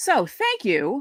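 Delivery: voice unexpectedly jumping way up high. Thanking listeners at the end of the show: voice went really high. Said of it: "my voice went really high".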